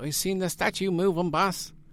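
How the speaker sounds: put-on half-hearted, tipsy drunk man's voice. Retelling what a drunk Johnny said about the statue: failed Johnny impression. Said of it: "I can't do his voice".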